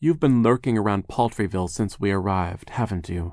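ordinary delivery

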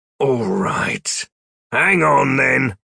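snarling, rough growl through the words. Narrator reading Klooch's answer to her, growling. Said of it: "he bared his teeth again and growled".

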